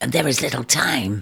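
low rasping whisper. An eagle urges a woman tending a wounded snake, in a low, rasping whisper. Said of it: "low, rasping whisper".

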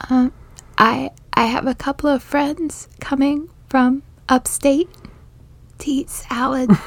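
small high voice. Asked by the other speaker to do it, the speaker repeats the line: Marcel voice. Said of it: "I do a pretty decent Marcel voice".

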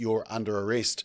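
normal talking voice

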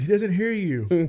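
slow, mocking, taunting jeer. Acting out Elijah heckling the prophets of Baal from the crowd: imitating mocking heckling. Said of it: "heckling them from the crowd".

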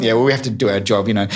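ordinary talk

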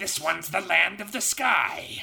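dead-on high, creaky male anime character voice. Quoting a character from an anime being discussed: impression of the anime character. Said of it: "You sound exactly like that guy".

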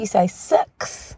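New Zealand accent. Giving tips on how to say words in a kiwi accent; kiwi accent. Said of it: "in my Kiwi accent".

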